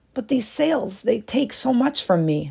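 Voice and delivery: fearful, pleading, begging tone. A wife answers her husband, who wants another sail woven; pleading. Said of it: "she pleaded".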